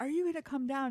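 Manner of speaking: high, yelled calling out. Telling a story of the mom yelling at the dad on an icy hill: imitating mom yelling. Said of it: "she's yelling at my dad".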